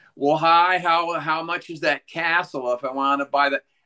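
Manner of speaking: put-on high, twangy, clueless-sounding American accent. Mimicking how Europeans do an American accent, twangy ignorant American accent. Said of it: "doing this twangy, uh, ignorant thing".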